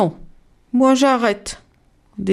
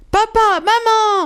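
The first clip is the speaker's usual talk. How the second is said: very high, piercing, shrill scream; 13 semitones higher than usual. Narrating a children's story, voicing the little rabbits: screaming. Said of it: "Hurlent les lapins".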